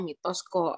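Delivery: ordinary talk, nothing marked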